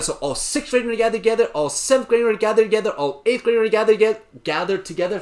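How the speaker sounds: rapid-fire, rushed, rattled-off run of words. Explaining Zoom breakout groups to sixth to eighth graders, the speaker talks very fast. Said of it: "I'm talking so fast".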